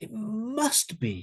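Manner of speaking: must strongly emphasized, hit hard. Teaching modal verbs with extra meaning, strong stress on must. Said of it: "You would really emphasize it".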